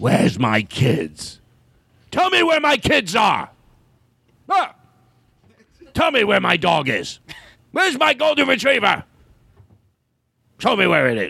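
creaky, rough, high, swooping, insistent voice. Doing a Harrison Ford impression the group was asked for: Harrison Ford impression. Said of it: "Harrison Ford".

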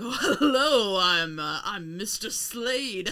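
put-on sinister villain voice. Describing an actor's over-the-top villain role, put-on sinister, sleazy Mr. Slade. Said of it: "acting the most sinister and sleazy he can".

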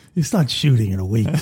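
put-on raspy voice. Quoting the Don's line from the movie, Johnny Fontaine voice. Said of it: "It sounded like Johnny Fontaine when I said it".

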